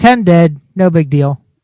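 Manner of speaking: ordinary talk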